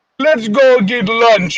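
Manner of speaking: very slow, thick, bad put-on Russian accent. Describing a group where half had thick Russian accents: thick Russian accent impression. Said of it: "I can't do a Russian accent very well".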